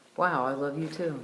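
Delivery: normal talking voice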